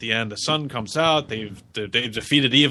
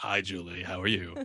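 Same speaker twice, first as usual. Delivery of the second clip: sexy, creepy tone, lower and quieter; 4 semitones lower, 10 dB quieter than usual. Saying hi to a fan on request, asked for sexiest voice: creepy voice. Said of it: "Oh, that was creepy".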